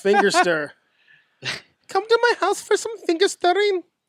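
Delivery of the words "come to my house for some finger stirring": put-on Scandinavian accent, very high-pitched. Speaker riffing on a joke word with two others, Scandinavian accent. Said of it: "I should not do accents".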